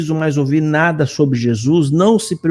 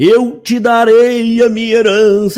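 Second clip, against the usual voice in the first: put-on tearful preaching, high and drawn-out; 7 semitones higher, 4 dB louder than usual. Quoting what he says time and again, imitating a tearful tone. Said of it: "nesse tom choroso".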